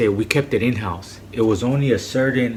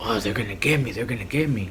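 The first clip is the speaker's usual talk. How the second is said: put-on frantic, panicky, paranoid fretting; 4 dB quieter than usual. Retelling a man wigging out about being caught, imitating someone panicking. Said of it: "he's just wigging out".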